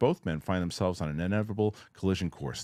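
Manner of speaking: ordinary talk, nothing marked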